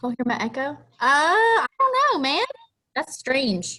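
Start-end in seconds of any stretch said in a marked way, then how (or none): 0.7-2.4 very high, louder helium voice. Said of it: "I sounded like my l-, voice was on helium".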